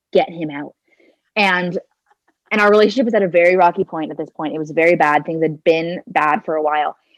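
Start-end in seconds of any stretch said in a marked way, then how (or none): 0.1-0.7 mock whisper. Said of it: "I whisper in his ear".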